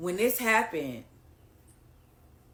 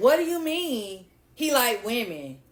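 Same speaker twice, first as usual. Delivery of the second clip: higher, louder, real sassy tone. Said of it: "like, real sassy with it".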